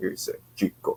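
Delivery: breathy whispered voice, all breath. Describing a comic's gym owner written to sound like Razor Ramon: Razor Ramon impression. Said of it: "he wrote him to sound like Razor Ramon".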